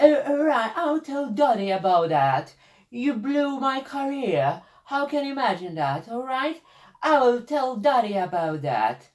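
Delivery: put-on British accent, high pitched and slow. Imitating a cast member's line about telling Dottie: Elizabeth Hurley British accent. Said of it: "her fantastic British accent. It goes something like this".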